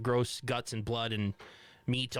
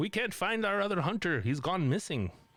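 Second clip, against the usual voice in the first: put-on Canadian accent, laid on thick, pitched up; 7 semitones higher than usual. Retelling a call from a tribe elder in a nearby town, thick canadian accent. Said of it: "a really good job".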